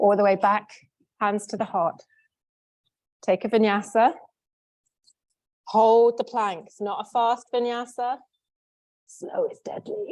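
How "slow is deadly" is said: hushed, breathy, spooky whispered scary voice. Yoga teacher guiding a class through a slow vinyasa, in a scary voice. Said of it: "that was my scary voice".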